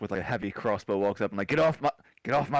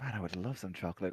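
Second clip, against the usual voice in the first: very hushed, very quiet mutter under the breath; 2 semitones lower, 11 dB quieter than usual. Voicing a character who speaks a line under the breath: muttering under the breath. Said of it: "says under the breath".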